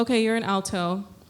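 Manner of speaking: plain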